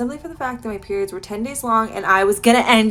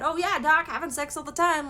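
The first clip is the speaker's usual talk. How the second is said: mock, playfully kidding, joking, tongue-in-cheek tone; 4 semitones higher, 6 dB quieter than usual. Retelling a reply to a doctor's question: retelling own joking reply. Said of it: "like, jokingly".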